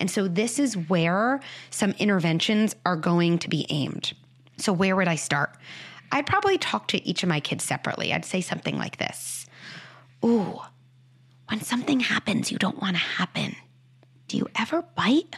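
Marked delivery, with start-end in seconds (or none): 10.2-15.4 gentle, soft, hushed whisper with a reverent feel. Showing how they'd ask each of their kids about biting: whisper. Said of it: "use that whisper voice".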